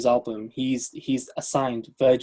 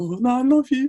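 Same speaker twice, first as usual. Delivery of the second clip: high, girlish put-on voice. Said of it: "she's like".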